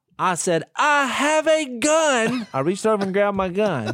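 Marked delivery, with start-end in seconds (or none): 0.8-2.5 very high, deliberate, drawn-out yell. Retelling a night knock on a hotel door, imitating someone yelling. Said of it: "You're just yelling through the door".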